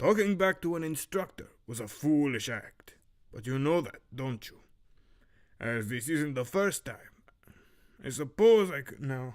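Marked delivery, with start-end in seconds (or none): 0.0-7.0 put-on slight, light Romanian accent. Reading lines for Zoran in the first chapter, slight Romanian accent. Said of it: "this is all coming off of a bit Romanian".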